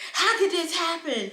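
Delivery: mock livid shouting, high and furious. Speaker retells a livid woman yelling at her, retelling an angry yell. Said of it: "she's yelling at me".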